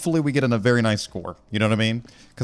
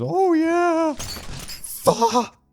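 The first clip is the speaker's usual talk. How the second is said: very high-pitched put-on voice. Showing how the gravedigger's companion talks, do a very high-pitched Paul Bearer voice. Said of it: "has this very high pitched voice that goes".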